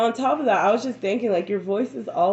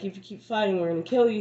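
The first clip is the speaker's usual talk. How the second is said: put-on angry tone. Retelling how a robber got mad and threatened her: imitating an angry robber's threat. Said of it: "gets mad".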